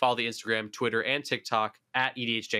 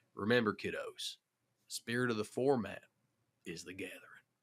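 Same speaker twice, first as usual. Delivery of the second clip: quieter mock Western cowboy drawl; 7 dB quieter than usual. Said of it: "say the catchphrase in an accent this time".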